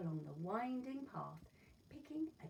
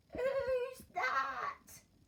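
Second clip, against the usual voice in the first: put-on creaky old granny call, very high and loud; 10 dB louder than usual. Reading a story: the wolf knocks at Granny's door, answered in a creaky voice. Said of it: "A creaky voice called".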